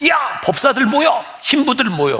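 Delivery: angry, rousing rallying shout.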